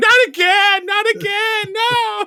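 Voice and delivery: put-on very high, very slow, drawn-out children's screams. Voicing the children being duct taped to someone's back: screaming children. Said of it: "they immediately start screaming and saying".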